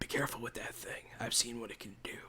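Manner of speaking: barely-there, very soft whisper. Voicing Sinclair warning a player about a gun: whispering as Sinclair. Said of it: "Sinclair will whisper to you".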